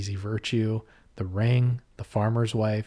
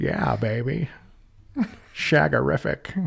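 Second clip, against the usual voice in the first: gravelly, creaky put-on voice; 4 semitones higher than usual. Doing an Austin Powers catchphrase as Jimmy Stewart voice. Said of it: "Jimmy Stewart doing, doing Austin Powers".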